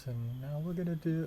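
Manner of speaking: soothing, soft, high, calm yoga-instructor voice. Describing an older woman in a yoga video, mimicking her calm voice. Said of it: "It was like the calm voice".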